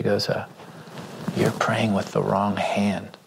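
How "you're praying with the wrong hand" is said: quiet whisper. Retelling what a wife whispered while he prayed over people: imitating a whisper. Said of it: "she whispers into my ear".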